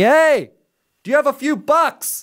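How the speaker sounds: mock high-pitched hollered yell. Retelling how a man by the road yelled a request: imitating a man yelling. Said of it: "he yells at me".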